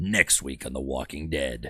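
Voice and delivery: very low, deep, hushed promo trailer announcer voice. Joking to people after getting the voice back, in a low Walking Dead promo voice. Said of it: "if I get my voice low".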